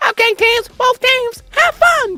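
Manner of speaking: very high, puppet-like character voice. Asked to start over and do it with the Elmo voice. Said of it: "Do it with the Elmo voice".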